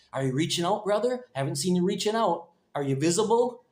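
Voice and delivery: patronizing, condescending elder tone. Speaker imitates an elder in the congregation; mock-condescending elder voice. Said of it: "That's my elder, condescending elder voice".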